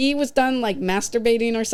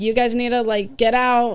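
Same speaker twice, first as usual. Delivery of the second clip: put-on firm, stern big girl voice. Retelling telling two men in a theater room to get out: imitating own firm big girl voice. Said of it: "I'm using my big girl voice there".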